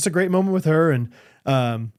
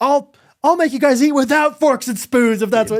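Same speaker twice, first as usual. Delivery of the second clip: very high, loud raised voice; 9 semitones higher, 4 dB louder than usual. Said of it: "raised my voice".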